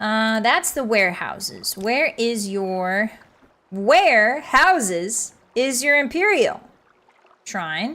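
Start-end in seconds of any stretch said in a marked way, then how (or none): 3.7-8.0 synthetic, computer-like text-to-speech delivery. Searching for a shrine, the speaker briefly slips into an ai voice. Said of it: "Why did I say that like an A I voice?".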